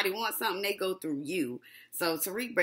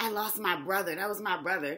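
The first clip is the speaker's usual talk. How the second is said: acted false sorrow, fake grieving, put-on upset; 3 dB quieter than usual. Retelling a show character's fake grief: mock upset grieving. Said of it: "Ghost trying to act all upset like".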